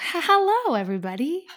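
surprised-sounding. Opening the podcast, a co-host greets the listeners, sounding surprised. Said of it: "You sound like surprised".

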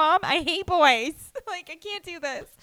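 put-on distraught, high, speaking through tears. Retelling going home to her mom after being broken up with, imitating her past self crying. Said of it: "And I'm just like crying".

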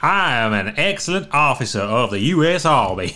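slow, put-on drawled Texan accent. Turning a character into a texan and speaking his line, put-on texan accent. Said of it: "We can turn him into a Texan".

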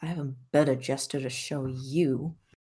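very quiet, low mutter under the breath. [name] answers another player's finger-gun gesture, [name] muttering under breath. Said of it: "[name] just mutters under his breath".

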